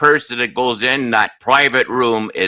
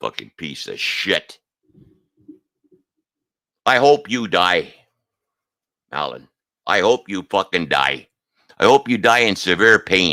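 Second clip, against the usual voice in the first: raw, hard, angry outburst; 4 semitones lower than usual. You are addressing mallon directly and say outright that you are angry; sound angry. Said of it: "if I sound angry, that's because I am".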